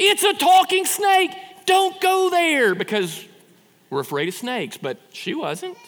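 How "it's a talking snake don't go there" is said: high, loud, slow, pleading shout. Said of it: "don't you just wanna say to Eve".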